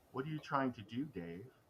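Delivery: strange, very soft, machine-like synthetic voice. Voicing a computer system coming online and blocking the players: HAL 9000 computer voice. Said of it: "Mother comes online with a odd voice".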